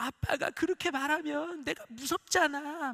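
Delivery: put-on high, slow, hurt, pleading little-girl voice.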